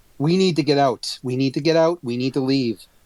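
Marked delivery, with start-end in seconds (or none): none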